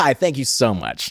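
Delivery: slow, overly polite, gracious royal-style manner. Imitating an actor's polished interview manner: Tyler Johnson in interviews. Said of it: "show him going like".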